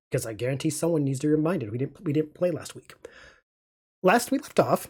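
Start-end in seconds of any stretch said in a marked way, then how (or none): 4.0-4.8 voice cracking and breaking mid-phrase, pitched up. The speaker begins recapping the last session, voice cracking. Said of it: "my voice just cracked".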